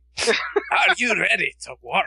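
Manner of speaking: put-on Scottish accent laid on thick. Quoting a rock guy with a horrible voice: Fat Bastard voice. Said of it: "the guy from Austin Powers".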